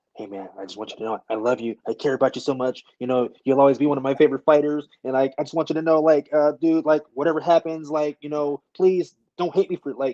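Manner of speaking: panicked, rushed, fast gush of words. Speaker acts out what a man told him, retelling his fast panicky talk. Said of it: "he started talking really fast".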